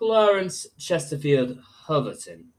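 spoken in British accent. Challenged to say a name with a british accent, the speaker does it in british accent.

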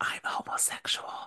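mock whispering. Describing how a friend leaned in and said it, retelling a whisper. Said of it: "He like whispers".

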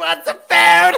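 put-on, harsh, rough, hoarse hollering. Retelling how she attacked, imitating someone yelling. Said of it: "She's yelling".

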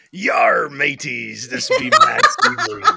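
put-on pirate voice. Greeting the others in costume on a Halloween show: pirate voice. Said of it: "articulate pirate himself".

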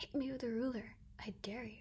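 hushed whisper. A narrator reads a rival's dare over a droning fan: whispering. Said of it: "he whispered at me".

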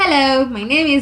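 very loud, slightly high-pitched voice. Demonstrating a self-introduction in a voice: slightly high voice. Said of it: "you need to have like a kidogo high one".

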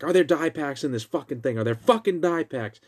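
mock heated, irate, angry demanding tone. Speaker retelling a man yelling at the girl behind the counter: retelling an angry yell. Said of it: "He's yelling at the girl behind the counter".

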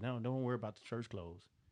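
sweet, kindly, welcoming, reassuring voice. Retelling how a lady invited the family into church, imitating Betty's sweet voice. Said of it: "in such a sweet voice".

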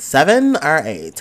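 very loud, high-pitched voice.

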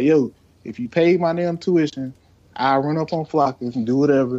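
normal talking voice

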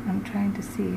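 soft, voiceless whisper.

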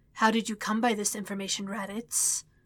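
cold, controlled, calm hissing voice. Narrating as Frieza questions Raditz about his information, Frieza's calm, cold hiss. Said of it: "hissed his calm, cold voice".

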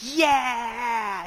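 put-on high, loud, happy, excited kid yell.

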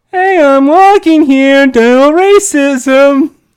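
put-on Boston accent. Correcting how a character should sound, demonstrating PJ as a Boston kid. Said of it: "He's supposed to sound like East Island, like Boston kind of kid".

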